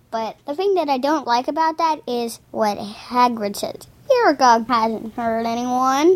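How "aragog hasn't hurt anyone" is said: usual speaking voice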